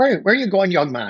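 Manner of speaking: put-on very strong southern Irish accent. Retelling an elderly woman asking him where he is going, in a strong Irish accent. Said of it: "strong Irish accent".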